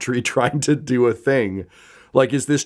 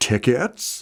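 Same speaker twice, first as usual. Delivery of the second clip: startled, surprised voice. Voicing a ticket seller startled by a tap on the shoulder: startled ticket seller. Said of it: "leaps into the air. He's so surprised".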